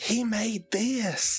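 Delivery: very large, loud stage whisper. Playing a character pointing out who made a dress: very large stage whisper. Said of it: "in a very large stage whisper".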